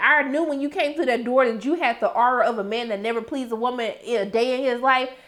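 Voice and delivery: normal talking voice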